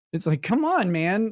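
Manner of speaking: ordinary talk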